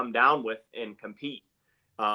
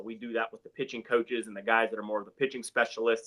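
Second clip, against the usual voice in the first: ordinary delivery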